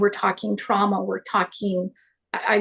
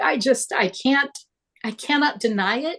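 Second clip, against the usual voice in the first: choked-up, faltering, halting, on the edge of tears; 4 semitones higher than usual. A guest speaking to Teresa, who had them on, near tears. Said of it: "I'm going to cry".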